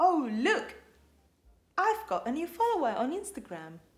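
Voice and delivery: polite, good British English accent. Explaining how english speakers drop the final r, the speaker tries a good english accent. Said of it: "that sounds like a very good English accent".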